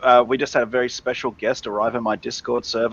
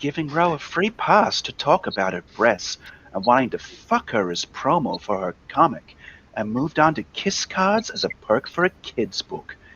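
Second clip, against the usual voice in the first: sultry, smooth, silky put-on sexy voice; 2 semitones higher, 4 dB quieter than usual. Doing the reading aloud for the others, in a put-on sexy voice. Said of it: "let me put on my my sexy voice".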